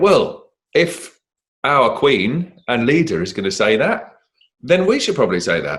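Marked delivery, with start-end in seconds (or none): none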